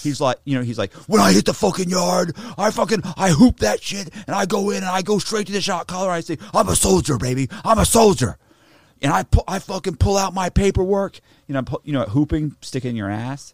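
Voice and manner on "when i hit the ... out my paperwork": over-animated, pitched-up, cartoonish bravado. Mocking a motivational speaker's prison story: imitating Wes Watson. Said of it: "how ridiculously over animated he is".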